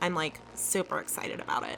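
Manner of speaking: sarcastic, flat, barely above a whisper. Answering Dad, who says they use sarcasm often, sarcastic. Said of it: "that's sarcasm".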